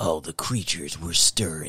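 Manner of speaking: low, creepy, spooky put-on storyteller voice. Reading out titles to make them sound better, creepy put-on voice. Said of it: "I'll say them in a creepy voice to make it sound better".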